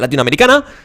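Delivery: hurried upward lilt on latinoamericana. Acting out a reply to someone from Colombia, quick rising pitch on latinoamericana. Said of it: "Y todo es súper rápido. Y además con este tono de voz ascendente".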